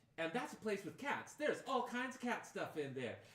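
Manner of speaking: excited, bubbly, high sing-song chatter. Voicing Julia prattling along on the walk: Julia's bubbly excited voice. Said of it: "Julia prattling along the whole time, bubbly, exciting".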